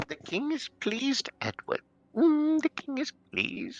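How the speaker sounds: very high, unnatural, disturbing sing-song voice. Imitating the voice that calls you edward, high-pitched unnatural voice. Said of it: "high pitched, unnatural".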